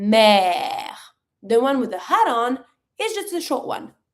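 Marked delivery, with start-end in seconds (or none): 0.0-0.9 lengthened, drawn-out vowel, lower pitch. Showing a learner the low-accent sound: long drawn-out vowel. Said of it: "it's a long one".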